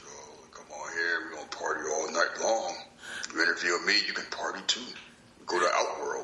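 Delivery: deep fighting-game character voice. Discussing someone's throwback gimmick and doing his voice: Mortal Kombat voice. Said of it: "With his Mortal Kombat voice".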